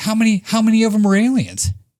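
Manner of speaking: play-acted, high shouted yell. Retelling a scene where she yells back at him: imitating a woman yelling back. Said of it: "yelling back at him".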